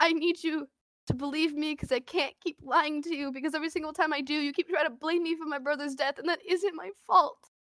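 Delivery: mock sobbing plea. Retelling a scene where someone bear-hugs her; imitating sobbing. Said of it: "I'm like sobbing".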